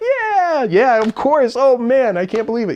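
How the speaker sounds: high, loud burst of happy excitement. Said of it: "it's okay to be happy about this".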